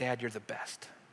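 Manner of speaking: soft, very quiet whisper. Retelling what a daughter says to her dad: imitating a whisper. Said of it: "she'll even just whisper to me".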